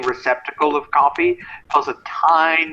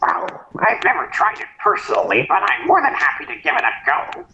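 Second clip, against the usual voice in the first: put-on high, swooping nerdy school kid voice; 5 semitones higher than usual. Player voices a raven answering an offer of goat curry: nerdy school kid voice. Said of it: "Raven sound like that nerdy school kid".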